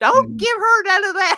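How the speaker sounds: shrill, high-pitched, very loud, full-volume scream. Retelling a memory of grandpa sharing tobacco: imitating granny screaming. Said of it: "my granny screaming".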